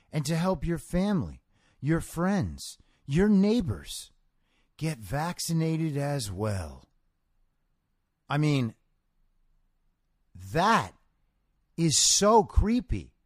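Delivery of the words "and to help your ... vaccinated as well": quiet, soft, pleading, almost begging politician voice. Reading a politician's quote aloud to listeners; Joe Biden impression. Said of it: "I'll try to be as Joe Biden-y as possible".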